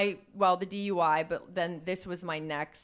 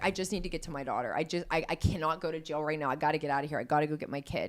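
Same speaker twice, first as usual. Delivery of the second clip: tearful, crying pleading voice. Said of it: "I was crying out loud to God".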